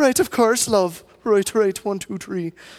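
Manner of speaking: polite, charming, put-on Irish accent. Imitating a polite, charming Irishman invited into your house: put-on Irish accent. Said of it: "wins you over with his accent".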